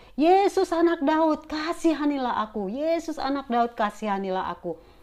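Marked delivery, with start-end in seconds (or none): 0.2-3.8 crying out pleadingly, high and drawn out. Speaker retelling how a woman kept crying out to Jesus, retelling her shouting. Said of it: "Dia tetap berteriak".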